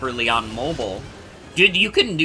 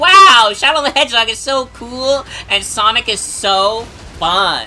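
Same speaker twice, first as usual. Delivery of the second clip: put-on baby talk, high and childish; 8 semitones higher, 4 dB louder than usual. Speaker reenacting what they said as a young kid, in a childish baby voice. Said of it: "I said it like that because I was a baby".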